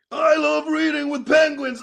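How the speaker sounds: loud, rough-edged American pro-wrestler voice. Recording a voiceover in character as a wrestler: American wrestler voice. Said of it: "Yours is meant to be an American wrestler".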